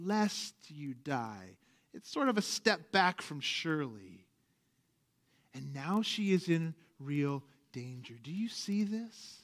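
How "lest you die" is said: low, gentle, softened, backed-off phrasing. Explaining how she softens God's warning, imitating her softened tone. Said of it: "do you hear it in her voice?".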